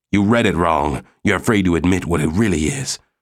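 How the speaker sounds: plain reading voice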